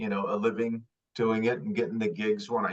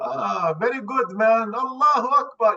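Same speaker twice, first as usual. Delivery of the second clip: put-on Middle Eastern accent; 12 semitones higher, 5 dB louder than usual. Retelling own reply on a phone call, in a Middle Eastern accent. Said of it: "I do Middle Eastern".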